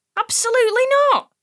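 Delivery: high, hissed, sibilant. Reading a story, answering Dad's question about the boy: hissed. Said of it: "I hissed".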